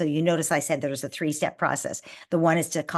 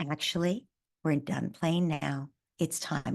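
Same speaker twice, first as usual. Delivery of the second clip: lowered voice, quieter; 5 dB quieter than usual. Showing parents how to end playtime with excited children, in a lowered voice. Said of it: "notice I'm lowering my voice".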